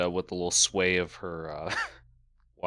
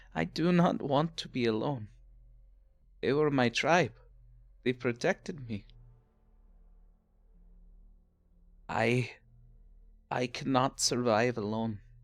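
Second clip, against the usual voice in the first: sincere, heartfelt tone, slightly pitched up; 6 semitones higher than usual. Game master speaks as a character looking toward both players, heartfelt tone. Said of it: "She says in a heartfelt tone".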